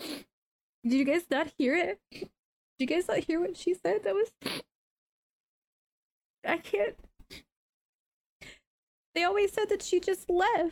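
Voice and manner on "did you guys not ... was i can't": crying, choked up, tearful voice. Voicing Pim, who is weeping over the story heard: crying, choked up. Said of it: "Pim's like".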